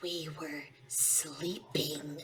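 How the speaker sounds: soft, barely audible whisper. Whispering in a victim's ear in character: whispering in character. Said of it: "I whisper in his ear".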